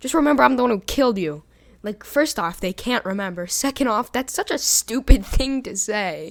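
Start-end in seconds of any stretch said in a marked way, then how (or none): 0.0-1.4 very fast, rapid-fire, raised, high-pitched delivery. Retelling a killer's line before a shovel killing: said very fast. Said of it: "would say very fast".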